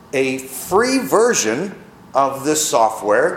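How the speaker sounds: free stressed and said slowly.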